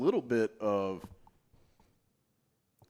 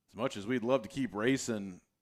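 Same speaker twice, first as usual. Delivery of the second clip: usual speaking voice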